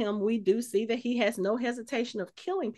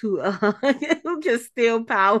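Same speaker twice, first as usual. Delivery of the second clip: higher, louder talk with laughter, giggling. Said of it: "I'm laughing because".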